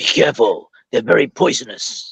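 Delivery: put-on low, growling New Zealand accent. Asked to read a film line aloud: Temuera Morrison's New Zealand accent. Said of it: "get this line read out by somebody with a New Zealand accent".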